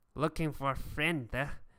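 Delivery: put-on toothless thug character voice. Voicing a figure missing front teeth who questions a player: voicing toothless thug. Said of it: "he's missing, like, his front teeth".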